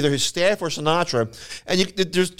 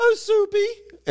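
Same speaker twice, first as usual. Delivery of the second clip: man's very high-pitched put-on woman's voice. Retelling a tv bit where a man plays the girlfriend: man imitating a woman's voice. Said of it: "in a voice like that".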